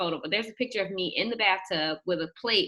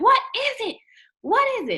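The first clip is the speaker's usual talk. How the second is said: put-on very high, loud, frantic, flustered shrieking; 6 dB louder than usual. A woman retells screaming at a man in the bathtub: retelling her own screaming. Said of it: "So I'm screaming".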